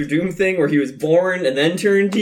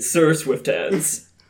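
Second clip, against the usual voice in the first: butler announcing voice; 3 dB quieter than usual. Giving the name to announce at the dining room: imitating the butler's voice. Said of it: "and I imitate his voice when I say it".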